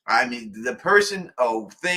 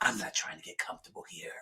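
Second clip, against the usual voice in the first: whispered low and rough; 9 semitones lower, 14 dB quieter than usual. Retelling what she said to him, in a Batman voice. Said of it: "She put the Batman voice in him".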